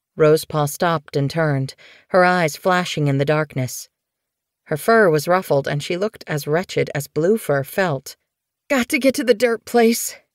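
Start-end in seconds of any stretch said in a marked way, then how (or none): 8.7-10.2 rough, hoarse croaking voice, pitched up. Reading a story aloud, a sick character answers another at night, croaking. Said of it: "she croaked".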